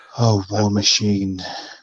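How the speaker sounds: put-on seductive woman's voice. Retelling a woman approaching after a match: imitating a seductive woman. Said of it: "And she's so seductive".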